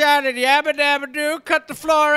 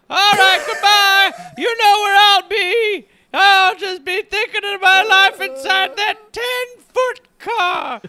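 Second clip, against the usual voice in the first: put-on high, doddering, drunk old grandpa voice; 5 semitones higher, 3 dB louder than usual. Acting out an old drunk grandpa recalling his first car ride: playing an old drunk grandpa. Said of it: "Grandpa, I'm gonna unplug you now".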